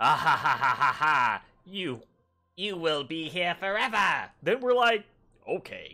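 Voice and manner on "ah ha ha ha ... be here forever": put-on villain voice, slow gloating cackling laugh. Speaker imagines how they might react at first, mock-evil villain laugh. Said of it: "Kind of evil".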